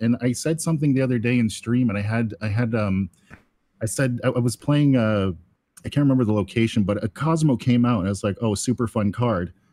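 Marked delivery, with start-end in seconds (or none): 8.4-9.5 mock, dripping, heavily sarcastic, fake-enthusiastic praise. Retelling own remark on stream when a card ruined the plan: imitating own sarcastic remark. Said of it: "very sarcastically".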